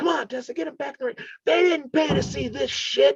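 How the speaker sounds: mock, very high-pitched shouting. Retelling yelling at Tessa while people brawl outside, retelling a yell. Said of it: "I'm yelling Tessa".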